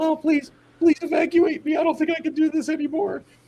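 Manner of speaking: mock tearful, crying plea, voice way up high. Retelling a girl in the woods begging to be evacuated: imitating a girl crying. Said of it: "she's just crying".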